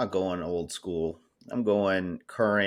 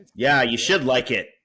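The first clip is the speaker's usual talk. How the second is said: very loud, high, shrill screaming yell; 5 semitones higher, 8 dB louder than usual. Backing up a teammate's pick during a draft, screaming. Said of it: "Sorry for screaming".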